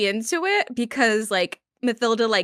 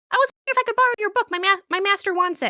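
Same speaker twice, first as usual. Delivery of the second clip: very high, small, light airy voice; 10 semitones higher than usual. A player voices a character addressing Gale, in a very light voice. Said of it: "the sound of this very like light voice".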